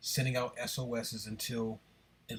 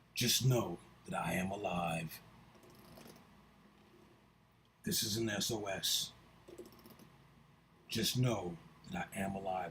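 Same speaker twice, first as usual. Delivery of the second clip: big, giant robot voice; 3 semitones lower than usual. On a stream, sending out an SOS, in Optimus Prime voice. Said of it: "That's my Optimus Prime voice".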